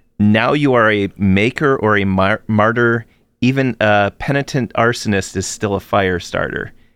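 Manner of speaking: ordinary talk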